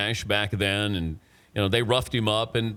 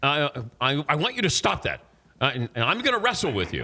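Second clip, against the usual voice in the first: put-on angry voice, pitched higher; 5 semitones higher than usual. Retelling how Commissioner Stern angrily threatened him: imitating an angry Commissioner Stern. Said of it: "He was mad".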